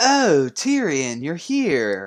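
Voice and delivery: sarcastic put-on astonishment. Explaining how they read a character's lines, acting out smug Varys. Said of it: "a smug tone".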